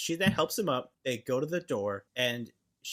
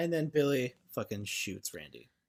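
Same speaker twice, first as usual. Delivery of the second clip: normal talking voice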